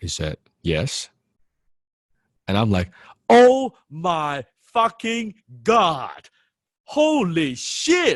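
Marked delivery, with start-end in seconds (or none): 3.3-8.2 put-on, very high, very slow, drawn-out starstruck yell. Retelling meeting someone he was a fanboy of, retelling yelling at top of lungs. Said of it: "I was like yelling from the top of my lungs".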